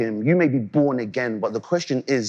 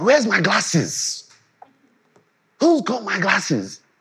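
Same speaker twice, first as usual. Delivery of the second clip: put-on heavy, thick Nigerian accent, high and slow; 7 semitones higher than usual. Imitating their dad looking for his glasses, in a thick Nigerian accent. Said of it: "with a thick Nigerian accent".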